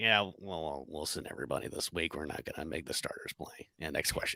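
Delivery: very quiet, breathy, almost whispered mutter. Imitating a coach saying the starters will sit: Bill Belichick impression. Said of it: "That was a good impression".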